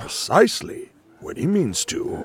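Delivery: put-on wise old wizard character voice. Speaker finishes a quote after being asked about doing voices, Gandalf voice. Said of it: "Is that you doing those voice impressions?".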